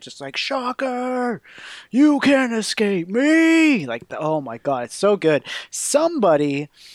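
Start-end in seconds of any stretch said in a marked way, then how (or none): 0.4-3.9 roaring villain shout, high, 'me' stretched out. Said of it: "the shouting at Shocker".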